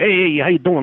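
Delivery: put-on older tough-guy voice. Describing an older neighbor next door: imitating a tough guy. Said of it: "a tough guy, you know, like".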